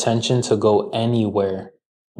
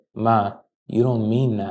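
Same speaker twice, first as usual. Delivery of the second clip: mock calm, even, soothing tone; 4 dB quieter than usual. Retelling what the speaker tells their mom when she says mean things: retelling a calm tone. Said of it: "I tell my mom with a calm tone of voice".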